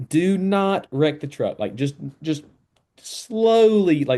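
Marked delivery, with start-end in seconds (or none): 0.1-1.6 mock screaming, higher pitch. Retelling orders given after starting at the back: imitating someone screaming. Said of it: "they're just screaming".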